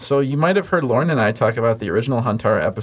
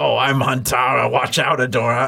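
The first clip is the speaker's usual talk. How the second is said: heavy, raspy voice like a chain smoker. Describing the cartoon's casting, imitating Huntara voiced like a heavy smoker. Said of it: "voice her as though she just smokes a lot of cigarettes".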